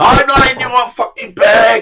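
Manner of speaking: put-on shout. Recounting a row with the bloke above him, retelling someone's shout. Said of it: "he shouts".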